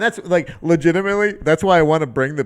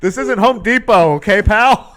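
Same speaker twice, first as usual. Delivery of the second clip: put-on loud, high, drawn-out hollering; 6 semitones higher, 6 dB louder than usual. Acting out yelling at someone at a show: imitating someone yelling. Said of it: "I'm just yelling at".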